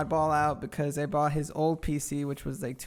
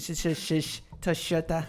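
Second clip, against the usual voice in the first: Argentinian Spanish accent with a run of heavy sh sounds. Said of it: "It's like an Argentinian thing".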